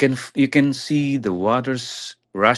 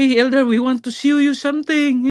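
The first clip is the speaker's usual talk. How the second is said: crying, very high, raised tearful voice; 14 semitones higher, 5 dB louder than usual. Recounting how the sisters met them on arrival, imitating sisters crying. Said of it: "the sisters were already crying like".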